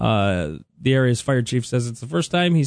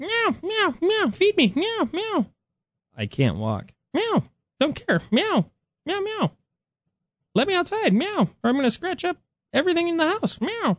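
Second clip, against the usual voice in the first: very high, meowing cat voice. Voicing an imagined pet cat's demands, in a cat impression. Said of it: "I like your impression of the keys".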